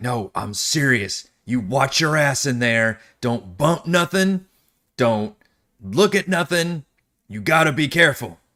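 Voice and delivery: dead-serious, stern delivery. A guard walks up to the players' characters and warns them; serious warning. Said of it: "gets serious and says".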